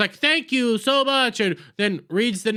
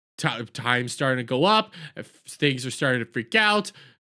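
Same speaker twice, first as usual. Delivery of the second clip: ordinary talk, nothing marked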